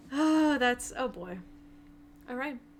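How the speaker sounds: dismayed, unhappy, not at all pleased tone. Reacting to the news about Pud, sounding unhappy and dismayed. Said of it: "you don't sound too happy about it".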